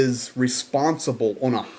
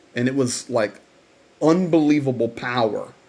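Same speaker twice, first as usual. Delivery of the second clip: ordinary talk, nothing marked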